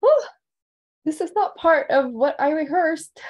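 high voice on the verge of tears. Thanking past students, the speaker breaks off mid-speech: on the verge of tears. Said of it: "I'm gonna start crying".

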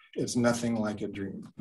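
normal talking voice

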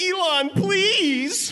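high, loud, desperate pleading tone.

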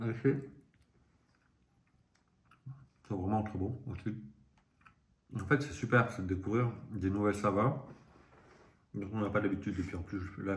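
speaking with food in mouth. Tasting a biscuit on camera and describing it, talking with mouth full. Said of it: "je parle la bouche pleine".

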